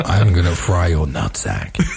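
menacing, sinister put-on robot voice, pitched low. Joking after a video about transformers: sinister Optimus Prime voice. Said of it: "My sinister impression of Optimus Prime".

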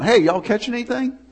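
high hollered call, as if across a distance. Retelling a story of a man on shore calling to fishermen, imitating someone yelling out. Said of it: "And he yells out".

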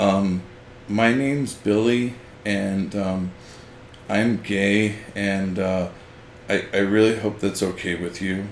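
weak, insecure-sounding delivery. Giving a first example of what attracts bullying: weak, insecure delivery. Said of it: "you're projecting weakness, you're projecting insecurity".

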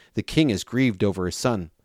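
usual speaking voice

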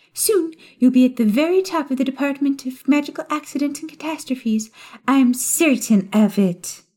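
high, sugary, laid-on-thick sweet voice. Narrating a story, voice Umbridge addressing Fudge in a sugary, poisoned-honey voice. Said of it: "a variety of pink shades in the form of a short toad-like witch who stood unassumingly in [name]'s doorway with a stack ... A high-pitched, sugary voice interrupted [name]'s thoughts".

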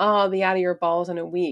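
mock drunken speech. Retelling what a drunk partner said to her: imitating drunk talk. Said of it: "talking all this drunk talk".

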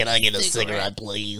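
sounds voice-changed. Asking the group for a cigarette: voice-changer voice. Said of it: "He sounded like he has one of those voice changer things".

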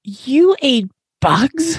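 high-pitched, stammering, tripping over the words. A bat in a crowd reacts to a young bat's story: stuttering. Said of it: "Stuttered one".

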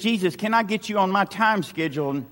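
ordinary talk, nothing marked

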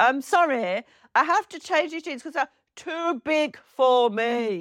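acted shout. Retelling returning jeans that were too big, retelling a shout. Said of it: "And I shouted".

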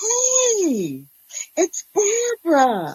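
very high, giddy sing-song, hey stretched out. Ex-wife announcing herself to Luke: giddy Barbara voice. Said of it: "Their smooth sailing life is erratically disturbed with [name]'s ex-wife appearing from a time of psychiatric hospitalization and joins the church where she was once the first lady".

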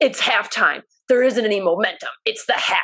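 mock snapping delivery. Retelling how he answered your question at halftime: retelling a snapped reply. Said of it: "he like snapped at me and goes".

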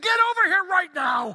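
very high, very loud, frantic shrill yell. Retelling a phone call where the caller was yelling: imitating Darcy yelling. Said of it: "yelling at me".

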